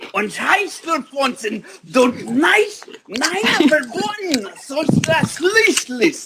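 very high, slow, made-up fake German gibberish. Showing the others they can fake languages: fake german. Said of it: "I can fake a lot of languages".

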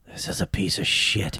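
quiet, hushed whispered aside. Retelling Josh leaning over during a movie: imitating Josh speaking quietly. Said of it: "leans over to me really quiet".

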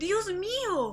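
sudden, shrill, high-pitched shriek. Shown her nephew's revolver by the commissioner, a woman is shrieking. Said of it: "chilló la mujer".

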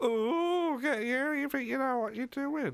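very high, silly puppet voice. Chatting about TV news with a co-host, Zippy puppet voice. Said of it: "You sounded just like Zippy from Rainbow".

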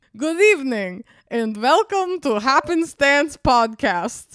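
loud put-on vampire voice drifting into Russian accent. Podcast co-host redoes the show's opening greeting in a vampire voice turning Russian. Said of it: "It turned Russian".

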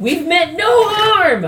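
shrill, very high, loud, drawn-out put-on yell. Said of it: "I'm gonna yell out".

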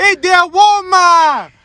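put-on high, loud yell in a child's voice.

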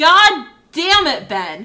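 very loud, drawn-out yell with swooping pitch. Retelling a reaction while watching a movie on TV: imitating own past yelling. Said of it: "literally yelling at my T V".

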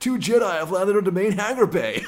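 very high, loud surfer-dude voice. Retelling a movie scene, voicing a droid officer: surfer-sounding voice. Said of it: "that guy who just sounds like a surfer".

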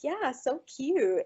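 play-acted, heavily mocking, scornful, sarcastic, laid on thick. Retelling a guy's reply to a girl, imitating a super mocking tone. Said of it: "super mockingly".

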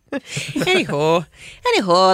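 put-on North Dakota accent.

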